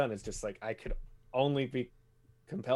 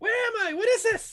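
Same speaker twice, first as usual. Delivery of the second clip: very high, very loud, shrill, muffled yelling; 9 dB louder than usual. A creature inside a container calls out, heard as muffled yelling. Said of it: "you can still hear it like kind of yelling in like a through the it's muffled".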